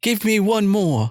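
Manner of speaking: very high-pitched, put-on British accent. Guessing how the english man they talk about speaks, in a put-on british accent. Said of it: "what kind of British accent does he have".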